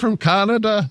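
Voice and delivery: very high, squeaky leprechaun Irish brogue. Teasing another speaker by echoing his Irish-sounding line. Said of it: "he sounded like the leprechaun from the commercial".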